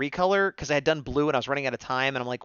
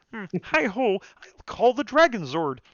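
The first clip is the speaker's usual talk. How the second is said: higher pitch, stretched out; 6 semitones higher than usual. Thanking people who are digging the Kermit Ranger, then doing a Kermit impression. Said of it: "my Kermit impression".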